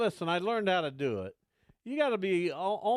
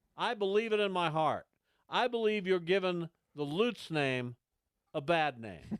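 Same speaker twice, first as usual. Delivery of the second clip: ordinary talk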